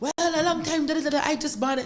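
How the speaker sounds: high-pitched mocking voice.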